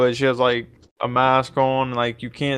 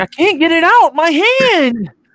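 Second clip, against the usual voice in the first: put-on very high-pitched, loud boy's cry, drawn out; 6 dB louder than usual. Retelling a movie scene where a boy's hand gets stuck: imitating the boy in the movie. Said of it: "You sound just like him".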